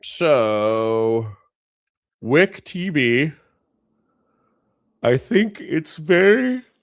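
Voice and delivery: sleepy, spoken through a yawn, drawn-out "so". Streamer introduces wick tv to viewers, yawning. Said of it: "Sorry for yawning".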